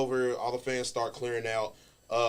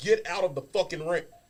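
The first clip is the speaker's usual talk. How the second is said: high, pitched-up yell; 5 semitones higher than usual. Retelling stomping an intruder in the ring: imitating his own yell. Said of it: "and I'm yelling".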